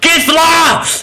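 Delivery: very high, shrieked scream. Voicing a character who screams out to an ally: screaming a name. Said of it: "He is going to scream out".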